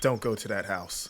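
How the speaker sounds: mock grave, super serious, very low and hushed. Retelling a man calling out to kids heading for the door, retelling a super serious warning. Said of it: "Like super serious".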